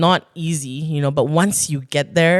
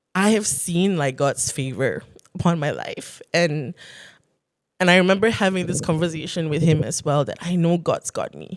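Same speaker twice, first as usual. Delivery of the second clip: voice filling with emotion partway through the sentence. Answering whether they ever felt it was a mistake, getting emotional. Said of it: "I'm just getting emotional".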